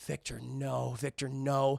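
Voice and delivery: drawn-out, very slow, disappointed, pleading tone. Retelling a scene, quoting a character watching the complex: imitating a disappointed voice. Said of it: "he just has this such disappointment in his voice".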